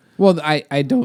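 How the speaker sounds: cracked voice, breaking all over. Speaker in a discussion about teaching methods, voice cracking. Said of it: "my voice is cracking all over the place".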